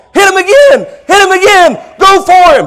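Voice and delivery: high, loud cheering shout.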